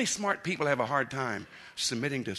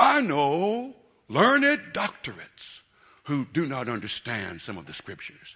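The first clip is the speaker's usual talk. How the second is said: stately, dignified speech; 6 dB louder than usual. Recalling a radio caller who made him laugh, speaker quotes him, imitating a dignified tone. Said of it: "he speaks in a kind of dignified tone".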